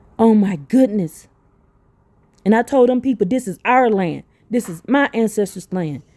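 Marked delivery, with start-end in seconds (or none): none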